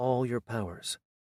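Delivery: ordinary delivery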